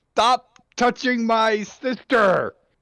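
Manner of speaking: put-on very high, loud, shrill toddler-tantrum shriek. Charging at the prince in a full meltdown: toddler-meltdown scream.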